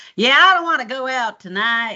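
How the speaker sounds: relaxed, casual Southern US accent. Recalling switching accents at home to the brothers: Southern American accent. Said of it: "Southern accents mainly".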